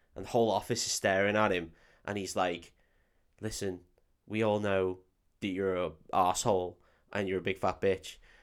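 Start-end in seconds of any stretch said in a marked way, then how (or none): 3.5-8.2 whispering, lower and quieter. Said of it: "leans next to her and starts whispering".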